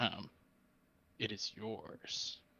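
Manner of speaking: very quiet, low, hushed murmur. A player's character answers, hoping the house won't overhear: speaking low. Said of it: "And speaking like low".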